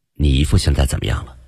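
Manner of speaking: ordinary delivery, nothing marked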